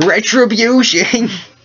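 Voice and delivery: very high, loud, shrill shrieking cry. A man screams after someone who walks away from him: screaming. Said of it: "He screams".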